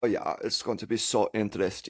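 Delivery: German accent, put on. Joking that listeners only tune in for the accents: put-on German accent. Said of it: "especially with a German accent".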